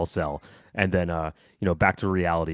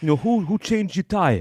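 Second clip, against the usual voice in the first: put-on thick New York accent, much higher pitch; 13 semitones higher, 4 dB louder than usual. Quoting the mechanic asking who changed the tire: thick new york accent. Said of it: "the great New York, like thick accent".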